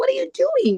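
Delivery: mock furious, very high-pitched angry voice. Retelling confronting a man who was touching her friend, retelling own angry words. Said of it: "I was so angry".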